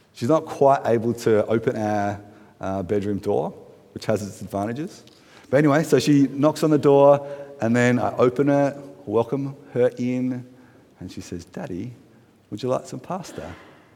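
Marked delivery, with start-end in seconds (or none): 11.4-13.5 very quiet, hushed, polite put-on British accent. Retelling his daughter offering him pasta at the bedroom door, british accent. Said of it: "I don't know why I did a British accent just then".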